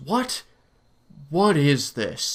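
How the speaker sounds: slow, strangely funky line reading. Recalling a Resident Evil scene at the blood, quoting Barry's funky delivery. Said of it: "this really funky delivery".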